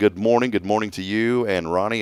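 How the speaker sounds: usual speaking voice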